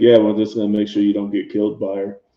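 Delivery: mock dry, wry fatherly tone. Voicing Candace teasing about the other character: wry dad tone. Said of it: "he says that in the wry dad kind of tone".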